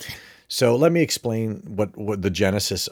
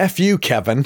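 put-on playful sarcasm, higher and louder; 6 semitones higher, 5 dB louder than usual. Retelling what a friend jokingly snapped at Kevin after his wisecrack, sarcastic and joking. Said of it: "sarcastically and jokingly said".

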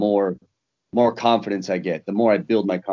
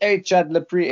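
put-on pitched-up Australian accent; 10 semitones higher than usual. Act out Robert Whittaker coming up to greet Chad in Australia, in Robert Whittaker's Australian accent. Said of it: "and with his Australian accent".

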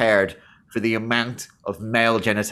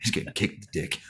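put-on dumb cartoon teen voice, quieter; 9 dB quieter than usual. Retelling own reaction while watching a stupid film: Beavis voice. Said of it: "Full Beavis and Butthead".

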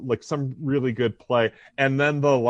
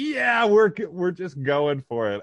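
put-on, all-in, fired-up, excited enthusiastic voice; 5 semitones higher than usual. Retelling how Tommy Lasorda celebrated a home run: imitating Tommy Lasorda excited. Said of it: "just so excited".

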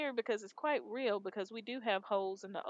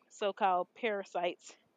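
plain

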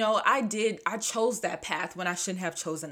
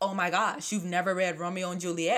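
plain

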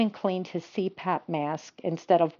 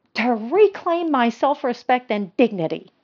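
restrained, controlled, raised high-pitched shout; 5 semitones higher, 5 dB louder than usual. Judy answers her husband's question about going up to the attic: controlled shout. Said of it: "She shouted in as controlled a manner as she could".

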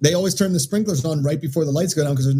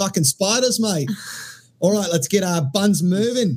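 best-attempt put-on Australian accent; 4 semitones higher than usual. Asked to do her best Australian accent: Australian accent. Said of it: "do your best Australian accent".

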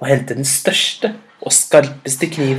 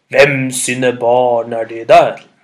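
deep, low storybook elephant voice; 3 semitones lower, 4 dB louder than usual. Reading a story aloud, voicing the huge elephant as it comes over, deep elephant voice. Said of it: "sa med dyp stemme".

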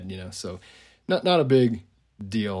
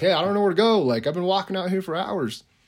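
put-on, shrill, very high yelling out; 10 semitones higher than usual. Retelling how a lost man called out in the woods: imitating someone yelling. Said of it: "just yelling out".

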